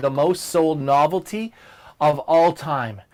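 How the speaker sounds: "most sold novelty" stressed, slow and weighted.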